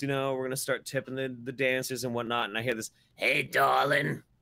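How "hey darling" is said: jarring, loud, grating, creaky rasping delivery. Retelling a woman calling out to him at a strip club, in a jarring voice. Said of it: "And a very jarring voice".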